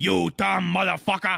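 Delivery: tough, aggressive Boston Italian mob-guy accent. Imagining what accent gorillas would have, a speaker demonstrates an aggressive boston italian accent. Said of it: "like a really like aggressive Boston Italian".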